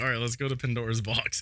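ordinary delivery

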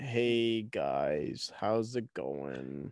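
very quiet, very slow, drawn-out, mournful sloth voice. Doing an impression of the saddest animal, a sloth: sad sloth impression. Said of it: "the saddest would probably be, like, a sloth".

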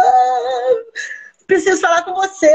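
tearful, desperate, high-pitched crying. Retelling a therapy patient phoning the speaker in tears: imitating a patient crying desperately. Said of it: "ela me ligou chorando... Desesperada".

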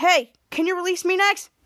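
usual speaking voice

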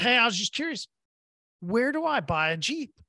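ordinary delivery

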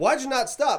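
mock loud, high, barking yell. Retelling being pulled over and quoting the officer, retelling an officer's yell. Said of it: "he's yelling at me like I have just come off of a murder".

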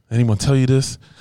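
ordinary talk

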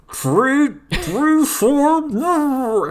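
very high, very loud yell with a full mouth. Discussing episodes, the speaker mimics a character's attack call, imitating Zoro, mouth full. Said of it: "he has something in his mouth, so it'd be like".

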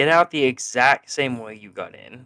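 ordinary talk, nothing marked

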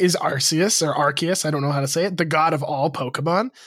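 ordinary talk

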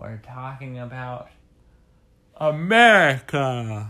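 words spoken through a yawn. A podcast host introduces the day's topic while yawning. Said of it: "I was yawning when I said that".

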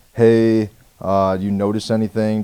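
snide, needling, super sarcastic tone. Retelling how a cop spoke at the passenger window; imitating a super sarcastic cop. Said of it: "Just kind of being super sarcastic".

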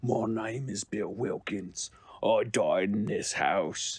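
put-on voice of a man in his seventies. Retelling the audio of a creepy video, imitating an old man voice. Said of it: "I do the voice that I can do".

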